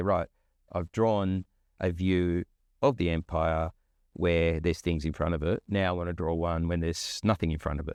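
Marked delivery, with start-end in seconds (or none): none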